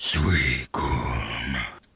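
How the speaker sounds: very low, parched, dry rattling voice. Reading a story aloud, voicing the thing that speaks: deep dry rattling voice. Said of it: "In a deep voice so dry I felt its rattle".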